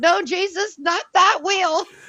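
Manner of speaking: shrill, very high panicked yell. Retelling a TikTok where a guy yells out: retelling a yell. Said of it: "the guy yells out".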